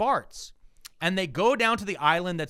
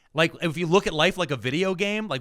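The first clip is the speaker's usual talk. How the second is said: usual speaking voice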